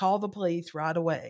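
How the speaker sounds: ordinary delivery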